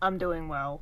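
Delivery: play-acted, low, flat, dead-level delivery. Mimicking someone's reply after they said they're not excited: imitating a deadpan delivery. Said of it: "that was so deadpan. It was just like".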